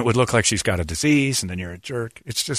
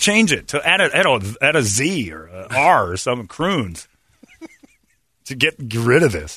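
plain

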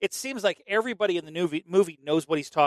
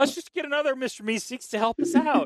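high-pitched cartoon character voice; 9 semitones higher than usual. Praising the Mr. Meeseeks episode, the speaker quotes it in a Mr. Meeseeks voice. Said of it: "doing that high-pitched voice".

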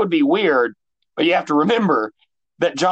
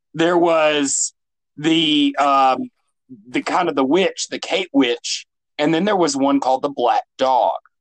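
usual speaking voice

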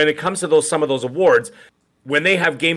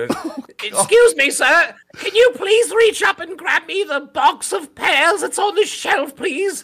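put-on elderly British lady voice, pitched very high; 13 semitones higher than usual. Joking that someone sounds like one, the speaker does an old British lady voice. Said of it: "He sounds like a 90-year-old British lady".

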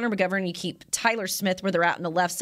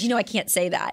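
play-acted guarded, tightened-up, defensive tone. Retelling a player's answer to a reporter's question: imitating Zach Martin, defensive. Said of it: "he got real defensive, like, tightened up".

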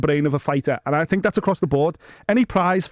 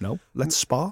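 put-on deadpan delivery, quieter; 2 semitones lower, 6 dB quieter than usual. Retelling what another person said back, in a mock-deadpan delivery.

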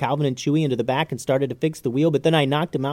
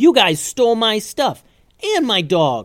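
loud, high yell swinging wildly in pitch; 7 semitones higher, 5 dB louder than usual. Calvin, grabbed by the wagon driver, answers him back: yelled. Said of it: "yelled Calvin".

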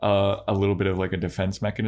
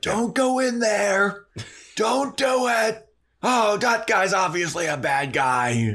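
very high, very slow, drawn-out hollering; 12 semitones higher than usual. Describing loud moviegoers, imitating them screaming at the movie. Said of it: "they're like screaming at the movie".

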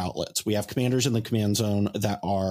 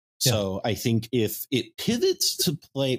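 slow voice cracking mid-phrase; 3 semitones higher than usual. Discussing how a deck might pivot in the current meta: voice cracking. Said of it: "my voice cracked so bad right there".

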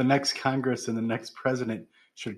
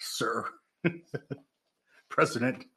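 attempted put-on male-voice impression; 3 dB quieter than usual. Co-host asks for it again; speaker attempts the Dan Cain impression. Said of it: "How do you do that impression again?".

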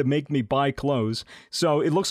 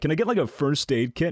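ordinary delivery

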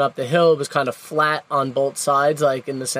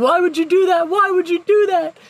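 put-on, very high-pitched, repeated scream; 4 dB louder than usual. Retelling a near tip-over in the van, imitating someone screaming. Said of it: "Alex started screaming at me".

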